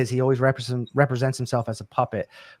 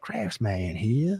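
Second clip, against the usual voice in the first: put-on Creole accent, real voice disguised; 4 semitones lower, 6 dB quieter than usual. Imitating a YouTube maker's channel greeting: Craftsman's Creole accent. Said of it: "this Creole accent".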